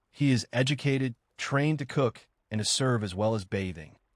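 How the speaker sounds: ordinary talk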